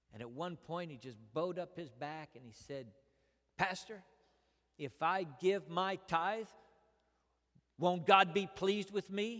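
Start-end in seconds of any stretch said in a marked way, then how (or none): 3.6-9.4 mock bitter, angry, raised challenging voice. Retelling a church member's challenge about tithing: imitating an angry man. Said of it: "he said it in an angry way".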